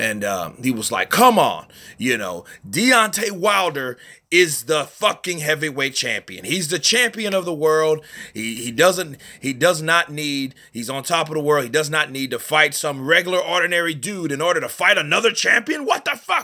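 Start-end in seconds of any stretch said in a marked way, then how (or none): 1.1-16.4 heated, worked-up rant, pitched up, full of disbelief. Retelling a promoter going off about the champion: Lou DiBella impression. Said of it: "that's my impersonation of Lou DiBella".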